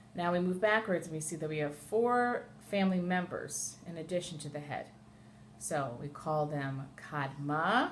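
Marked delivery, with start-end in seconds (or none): 7.0-7.9 Kadma, overemphasized final syllable -ma. Naming family members, overemphasizing: heavy stress on last syllable of kadma. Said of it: "I overemphasize the last syllable in each one of these words".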